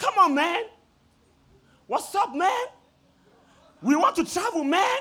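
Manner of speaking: rowdy hollering, very high-pitched and very loud. Recounting how a man came up and started shouting, retelling a man shouting. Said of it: "He started shouting".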